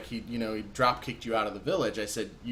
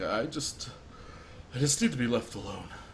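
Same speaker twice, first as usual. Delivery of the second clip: words spoken mid-cry, through tears; 4 dB quieter than usual. Voicing a character in the game, talking while crying. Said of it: "if you try to talk when you were in the middle of crying voice".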